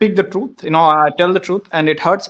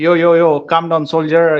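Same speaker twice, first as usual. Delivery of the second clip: plain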